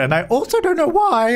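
high, cracking voice breaking partway through. Trying to assign a bed to Grim, the speaker's voice cracking. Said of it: "I just had a big voice crack as I said that".

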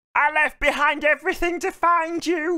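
very high, shrill screeching scream. Speaker recapping a scene, acting out a character screaming at her, retelling a scream. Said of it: "she's screaming at her".

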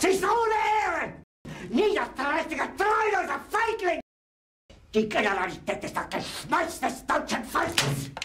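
very high, loud, swooping, furious ranting outburst. In a German drama scene, the leader berates his generals, angry outburst. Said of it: "Jetzt beruhig dich doch".

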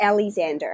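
American accent, americanized pronunciation. Saying own last name when asked, in an American accent. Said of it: "I said that in such an American accent".

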